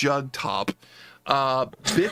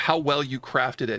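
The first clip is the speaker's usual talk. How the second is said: ordinary talk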